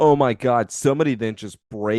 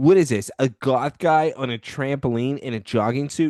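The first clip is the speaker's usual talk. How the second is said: usual speaking voice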